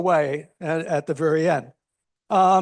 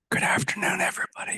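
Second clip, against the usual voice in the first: whispered, hushed, soft and barely voiced. Greeting the committee before going to the library, whispering. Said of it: "I'm whispering because we're going to the library".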